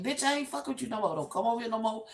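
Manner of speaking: put-on dismissive, brushing-off tone. Retelling a dream where the doll maker turns someone away: imitating someone rejecting. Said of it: "He's, like, rejecting".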